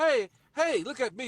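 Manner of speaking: high-pitched, drawn-out screaming and hollering. Speaker acts out a person who is not being heard: acting out a scream. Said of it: "You're screaming and hollering".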